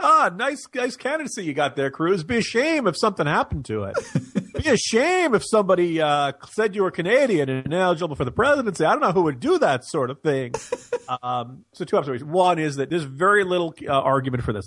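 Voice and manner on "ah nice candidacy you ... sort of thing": put-on 1930s mobster voice, old gangster-movie style delivery. Showing how a candidate's talk about a rival comes across, in a 1930s mobster voice. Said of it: "kind of like a 30s mobster".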